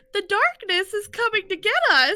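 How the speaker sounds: very high-pitched cartoon character voice, way up. Speaker recalls a game scene, quoting Mickey in a really high-pitched voice. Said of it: "Mickey in his really high pitched voice being like".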